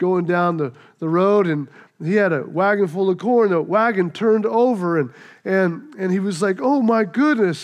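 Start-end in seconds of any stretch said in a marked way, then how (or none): 6.6-7.6 very upset, distraught. Telling a story, voicing a farm boy whose corn wagon overturned: distraught. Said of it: "and he was just distraught".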